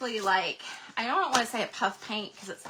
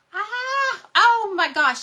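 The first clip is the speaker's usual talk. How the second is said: drawn-out, shrill, very high, very loud excited scream; 11 semitones higher, 10 dB louder than usual. Host showing viewers items spots one they missed, excited scream. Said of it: "I had the had the excited scream there".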